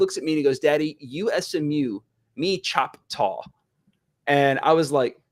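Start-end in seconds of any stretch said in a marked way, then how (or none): none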